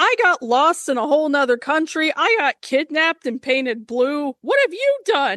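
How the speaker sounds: voiced as a giant bird puppet character. Acting out Big Bird in imagined therapy with Elmo: acting as Big Bird. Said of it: "I want Big Bird to be like".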